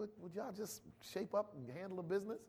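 soft, quiet, exasperated, reproachful voice.

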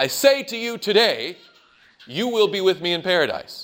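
brief pause placed right after the word "today". Showing how moving a comma changes meaning, pause after today. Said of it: "If you change the comma one position point".

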